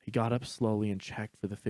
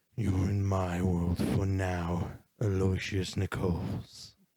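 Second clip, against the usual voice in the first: low, deep, warped, distorted voice; 2 semitones lower than usual. Reading a story, a dark figure speaks to the drowsy sleeper: deep, distorted voice. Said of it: "the figure said in a deep, distorted voice".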